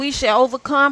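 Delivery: ordinary talk, nothing marked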